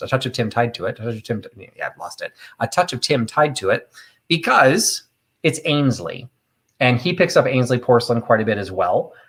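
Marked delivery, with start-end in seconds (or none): 0.0-1.0 very fast, rapid-fire, rattled-off delivery. Showing off saying a phrase again, said really fast. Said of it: "I can say that really fast".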